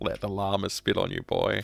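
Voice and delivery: put-on creepy old grandpa voice. Joking about a game line, saying it like a creepy old grandpa. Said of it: "like a creepy old grandpa".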